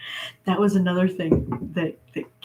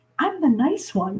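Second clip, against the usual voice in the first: sudden jump to higher pitch from flat American voice; 7 semitones higher than usual. Recalling a man who shifted from his flat American accent, imitating his half-octave-higher voice. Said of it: "he goes up like about a half octave and goes".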